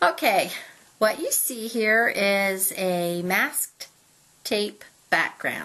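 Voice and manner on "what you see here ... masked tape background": careful, measured, slow and deliberate pacing. Introducing a masking tape background while trying not to giggle: speaking slowly. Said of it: "I had to say that slow".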